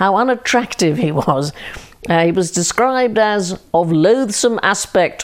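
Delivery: ordinary delivery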